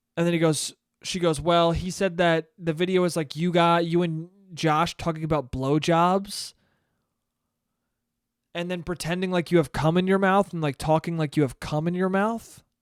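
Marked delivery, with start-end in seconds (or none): none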